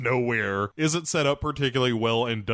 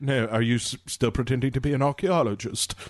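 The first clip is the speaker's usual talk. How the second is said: poorly done, put-on English accent. Retelling a scene, answering a jab as Lara Croft, in a bad English accent. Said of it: "which is my shitty English accent".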